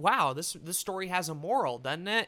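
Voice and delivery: ordinary talk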